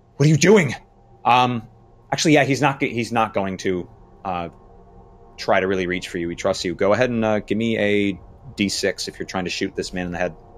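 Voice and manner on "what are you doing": high, loud alarmed shout. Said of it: "he's like".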